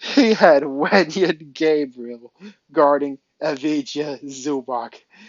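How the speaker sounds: words breaking up with laughter. Speaking about the opposing coach's lineup, laughing while talking. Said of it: "I can't stop laughing".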